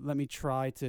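ordinary talk

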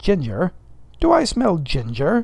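openly suspicious tone with swooping intonation. Stubb comes near the steward's cup and asks, suspicious. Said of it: "Suspiciously, asked Stubb".

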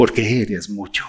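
deep, very low radio announcer voice. Reading out affirmation phrases for contrast, the speaker switches to a radio announcer voice. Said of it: "Voz de locutor".

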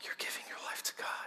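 stunned, breathy whisper, barely audible. Retelling what a stranger whispered after hearing about church work: imitating an old man's whisper. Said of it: "and he whispered, I'll never forget it, under his breath".

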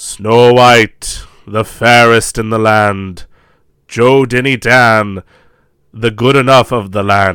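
loud, booming, oracle-like proclaiming voice. Describing a mask, the speaker shows how it talks: Magic Mirror voice. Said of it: "it just talks like this".

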